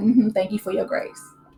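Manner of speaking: put-on sarcastic dismissive tone. Recapping a cast member's reply to a friend, mimicking sarcastic thanks. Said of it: "and Portia sarcastically".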